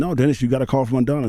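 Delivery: plain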